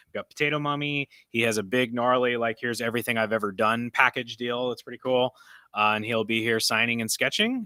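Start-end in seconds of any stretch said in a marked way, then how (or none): none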